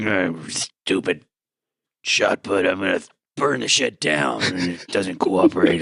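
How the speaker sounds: muttering under breath. Narrating a character's reaction for the group: grumbling under her breath. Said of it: "grumbling under her breath".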